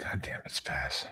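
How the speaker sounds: slow, whispered, disappointed, let-down dad voice. Scolding a co-host named Spaz: disappointed dad tone. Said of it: "He says it like a disappointed dad".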